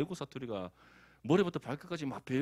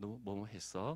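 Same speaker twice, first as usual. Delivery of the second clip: clumsy, awkward, put-on Seoul accent; 4 semitones lower, 8 dB quieter than usual. Gyeongsang speaker imitating how Seoul people talk, bad put-on Seoul accent. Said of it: "서울 애들 뭐 ... 뭐 잘 안 되지만 어쨌든 뭐 그런 말투".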